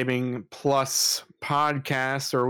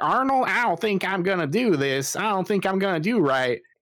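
put-on high-pitched Southern country kid voice; 6 semitones higher than usual. Retelling a scene, the speaker quotes a Southern kid talking to Arnold: Stinky voice. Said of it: "like Southern kid".

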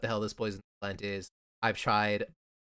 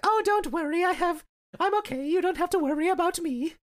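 victorian-era lady voice, much higher. Retelling a scene, voicing a girl playing it off, in a Victorian-era lady voice. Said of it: "Why is she from the Victorian era".

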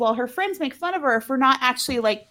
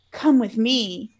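sinister, ominous, foreboding delivery. Retelling what one person said to another, mock-ominous. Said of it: "Kevin says ominously to Candace".

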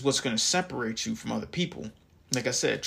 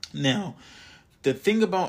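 voice cracks mid-phrase, pitching up; 5 semitones higher, 4 dB louder than usual. Speaker explaining wisdom to listeners, voice cracking. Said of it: "and my voice just cracked".

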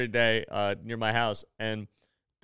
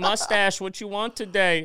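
teasing, ribbing, pitched-up voice; 9 semitones higher, 4 dB louder than usual. Retelling how Elizabeth teases the speaker on every visit, imitating Elizabeth. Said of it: "you started talking like her".

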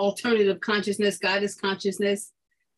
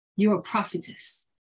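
put-on whispering.

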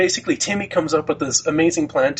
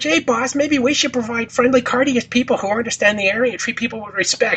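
high-pitched cartoon henchman voice; 8 semitones higher than usual. Recapping a South Park episode, quoting a henchman to his boss: quoting a cartoon henchman. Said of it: "And it's like".

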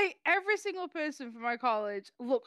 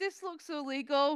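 ordinary talk, nothing marked

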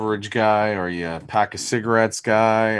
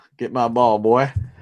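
put-on chirpy, drawled-out Southern accent. Imitating Bobby Jones chirping his golf partners: Bobby Jones southern drawl. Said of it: "That southern drawl".

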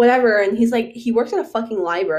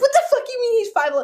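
acted yelling, higher; 14 semitones higher than usual. Telling the story, speaker reenacts yelling at this woman by the car, retelling her own yelling. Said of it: "to start yelling at this bitch".

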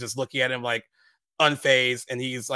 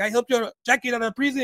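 mock calm, polite tone, higher pitch; 11 semitones higher than usual. Retelling a movie scene where a character acts calm and nice: imitating Chino being calm and nice. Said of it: "he's trying to be all calm and nice at first".

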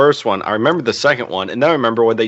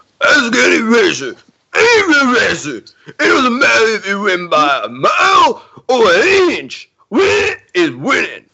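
very high, sing-song, swooping movie-star voice; 11 semitones higher, 3 dB louder than usual. Speaker tries again to get it right after a failed first attempt: Stallone impression. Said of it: "Let me see if I can get my Stallone impression".

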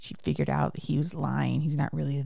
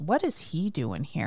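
usual speaking voice

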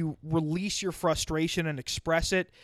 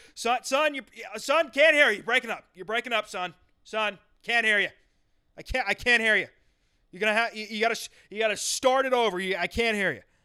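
mock-stern voice, higher pitch; 5 semitones higher, 3 dB louder than usual. Retelling how his father answered when the call broke up, imitating a stern dad. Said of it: "he'd kind of do the stern".

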